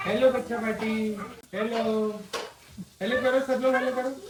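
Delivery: put-on high, loud, playful kid-talk voice.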